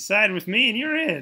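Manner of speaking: cracking voice. Character offering a deal to win someone's support, voice cracking. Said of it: "Don't listen to my voice cracking".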